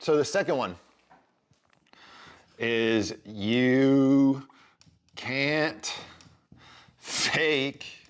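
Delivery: slow, laughing through words, "you" drawn out. Explaining her second point, speaker breaks into laughing while talking. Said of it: "sorry, I'm laughing".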